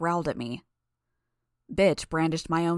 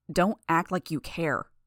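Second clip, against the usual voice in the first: usual speaking voice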